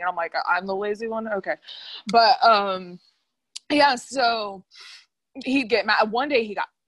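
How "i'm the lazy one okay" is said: normal talking voice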